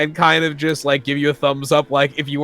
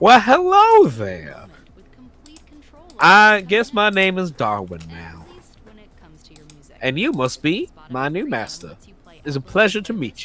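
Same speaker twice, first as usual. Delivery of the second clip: put-on guinea pig voice, higher pitch; 4 semitones higher than usual. A newly named guinea pig greets its new master, in Darwin guinea pig voice. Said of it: "This is not the permanent voice".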